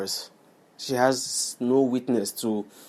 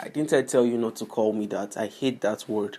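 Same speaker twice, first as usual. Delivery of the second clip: normal talking voice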